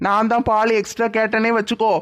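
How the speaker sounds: ordinary talk, nothing marked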